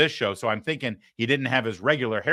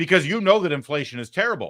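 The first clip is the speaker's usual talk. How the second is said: normal talking voice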